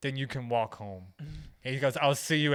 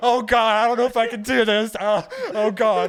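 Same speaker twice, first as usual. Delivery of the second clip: put-on, shrill, very high, very loud panicked freak-out; 9 semitones higher, 9 dB louder than usual. Retelling his first time getting high, the speaker acts out his reply: retelling own panic. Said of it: "I'm freaking out a little bit here".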